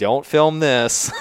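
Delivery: high-pitched, loud yelling. Recounting a shoot for a TV show: retelling a yell. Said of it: "I'm yelling like".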